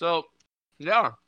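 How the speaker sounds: talking while chewing. Answering the other speaker while eating, talking while chewing. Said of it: "Sorry, I'm chewing".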